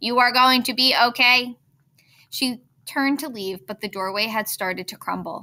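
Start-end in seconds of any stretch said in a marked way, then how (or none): 0.0-1.6 loud shouting yell. Narrator reading the robot reassuring a young hare amid flames, yelling over the fire. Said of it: "Roz yelled over the roar of the fire".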